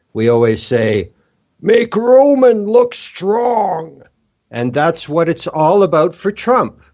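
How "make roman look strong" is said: very high pitch, slow and drawn out. Quoting one of your group's running joke lines, use a Vince McMahon voice. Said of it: "in a Vince McMahon voice".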